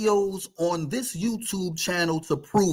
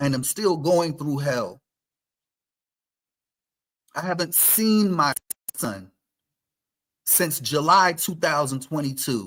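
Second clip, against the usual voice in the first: audibly fed-up, irritated, annoyed tone; 4 semitones lower than usual. Telling viewers about a personal struggle, irritated. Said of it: "I hope you can hear it in my voice".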